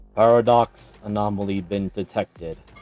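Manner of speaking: inhuman, mechanical, programmed robot voice. Narrating to the players, speaking as the mechanical voice they hear. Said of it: "you do hear the mechanical voice".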